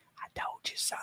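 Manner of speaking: hushed, very soft whisper under the breath. Imagining looking a defendant in the eyes at the verdict: imitating a whisper. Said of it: "whisper to her".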